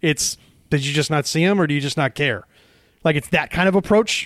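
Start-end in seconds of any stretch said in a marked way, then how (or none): 0.7-2.4 mock scornful, sarcastic, jabbing tone. Imitating a coach's harsh question to a player: imitating a sarcastic coach. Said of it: "he's very sarcastic".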